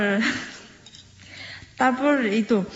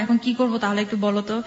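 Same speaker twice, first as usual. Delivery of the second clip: ordinary delivery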